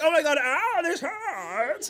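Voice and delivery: put-on high, drawn-out yelp of pain. Retelling a date's waxing appointment: imitating someone screaming in pain. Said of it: "he's screaming! He's like".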